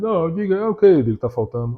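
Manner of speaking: earnest, dead-serious, solemn professor tone. Act out the professor's reply when called over to talk, imitating Onias being all serious. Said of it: "todo sério, né, com aquela voz dele".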